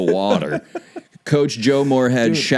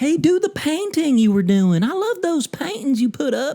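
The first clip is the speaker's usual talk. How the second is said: put-on very high Southern accent. Speaker imagines what Rhule would say to Joe Moorhead, in a southern accent. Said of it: "That's Rule talking in a southern accent".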